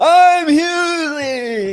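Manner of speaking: very high, sloppy, slurred put-on drunken voice. Showing how a requested impression would come out: imitating drunk slurring. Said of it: "It would just be me drunk, uh, sloppily saying who I am".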